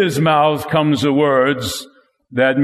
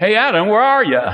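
offhand, nonchalant casual voice, pitched up; 6 semitones higher than usual. Showing how some readers voiced God calling to Adam, mock-nonchalant reading. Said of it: "as if God were nonchalant, a normal table conversation".

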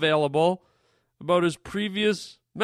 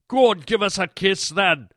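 put-on Scottish accent, character voice. Playing an indian man in india who has a scottish accent. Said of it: "with a Scottish accent".

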